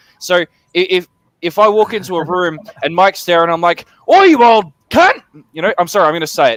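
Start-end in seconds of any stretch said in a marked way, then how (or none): 4.1-5.2 very high, shrill, aggressive, abrasive, drawn-out angry voice. Showing how the swear word sounds when said angrily on walking into a room: angry insult. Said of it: "you can probably tell that I'm angry".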